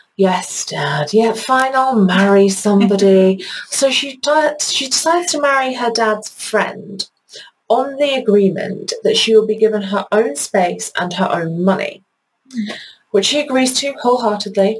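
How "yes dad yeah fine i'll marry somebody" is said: mock grudging, condescending, patronizing going-along tone. Retelling how a daughter answered her dad about marrying: mock-begrudging, patronizing reply. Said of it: "begrudgingly and kind of almost patronizingly is just like".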